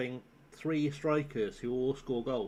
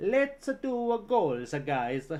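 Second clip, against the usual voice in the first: put-on, exaggerated Italian accent; 7 semitones higher, 5 dB louder than usual. Imagining Ranieri talking to his team: Ranieri impression, exaggerated Italian accent. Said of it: "It was clearly an impression of Mario".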